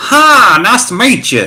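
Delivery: put-on thick, huge Southern accent with very high voice. Retelling meeting a winded old man on the stairs, in a huge Southern accent. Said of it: "with this huge Southern accent".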